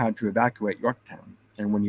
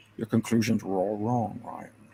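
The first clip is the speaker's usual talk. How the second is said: put-on Scottish accent with a Russian edge; 4 dB quieter than usual. Repeating his line from a funny movie scene, in a Russian-Scottish Sean Connery accent. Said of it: "In that Russian Scottish Connery accent".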